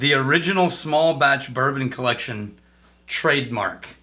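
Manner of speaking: usual speaking voice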